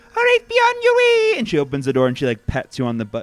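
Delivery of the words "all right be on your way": ridiculous fake Scottish lady accent. Voicing a lady character sending the party out the door: put-on lady Scottish accent. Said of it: "ridiculous lady Scottish accent I was putting on".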